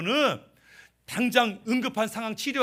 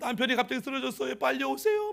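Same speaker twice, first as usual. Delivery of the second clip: weeping, crying, tearful voice; 3 semitones higher, 5 dB quieter than usual. Retelling a wife's call to the doctor after her husband collapsed: imitating a tearful phone plea. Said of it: "막 울면서 전화했어요".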